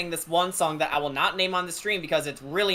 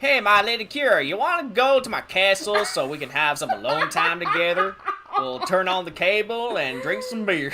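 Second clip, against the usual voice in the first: southern drawl stretching every word out; 3 dB louder than usual. Speaking as Strahd to Kira, Strahd with a southern drawl. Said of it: "imagine Strahd with a southern drawl".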